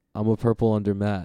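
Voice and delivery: ordinary talk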